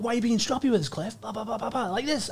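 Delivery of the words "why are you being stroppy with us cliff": put-on, curt, sharp, snapped-off delivery. Retelling what someone snapped at the speaker: imitating someone snapping. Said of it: "snaps off, like".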